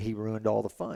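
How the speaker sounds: ordinary talk, nothing marked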